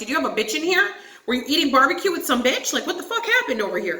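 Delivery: furious, really pissed-off accusing outburst. Retelling coming home to find the trash unchanged; retelling an angry outburst. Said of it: "So I get really fucking pissed".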